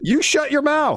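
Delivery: very high-pitched, deliberate, drawn-out yelling. Arguing over interrupting during a skit on the show: yelling. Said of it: "Why are you yelling at me?".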